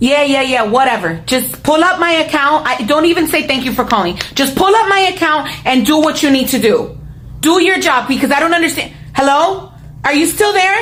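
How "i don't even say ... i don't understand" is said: loud shouting, higher pitched. Calling customer service and demanding the agent pull up the account: yelling. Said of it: "you started yelling".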